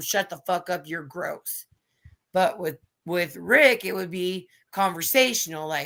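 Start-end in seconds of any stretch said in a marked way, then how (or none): 0.0-1.7 mock harsh snap, quieter. Contrasting how a rebuke would go with one person: retelling own sharp attack. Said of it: "that would just be a fucking bullet straight to him".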